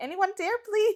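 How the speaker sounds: very high, desperate, pleading voice. Reading out the other speaker's old tweet: imitating a desperate plea. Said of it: "that's desperate".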